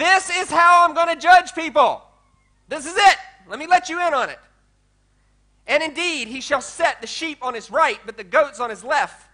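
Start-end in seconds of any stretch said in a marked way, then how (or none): 0.0-4.4 acted screaming, loud and high, top of lungs. Explaining a scripture passage, acting out how he said it: retelling a scream. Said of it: "he's screaming at the top of his voice".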